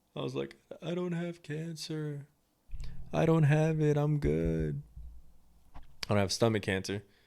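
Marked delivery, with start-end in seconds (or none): 0.8-4.8 high, sobbing blurt, crying through every word. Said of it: "and I'm sobbing".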